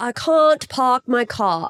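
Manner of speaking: attempted copied accent with British twang showing. Repeating a test sentence, trying the other speaker's accent with a british twang. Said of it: "Still a little British twang in there".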